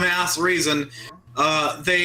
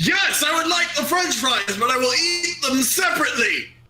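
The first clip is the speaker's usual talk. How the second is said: pitched-up, polite demon character voice; 7 semitones higher than usual. Playing a demon ordering a milkshake: Blood Monarch demon voice. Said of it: "I am Blood Monarch, the Skull Demon".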